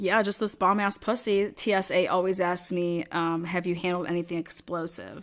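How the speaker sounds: ordinary delivery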